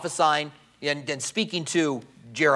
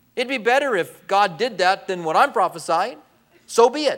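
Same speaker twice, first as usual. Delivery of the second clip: high, sarcastic tone. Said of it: "He's saying".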